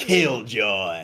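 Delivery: put-on game announcer voice. Showing an impression of the Halo announcer on request: Halo announcer impression. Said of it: "I do a pretty mean impression of the Halo guy".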